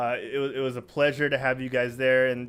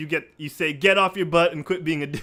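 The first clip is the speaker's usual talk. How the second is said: ordinary delivery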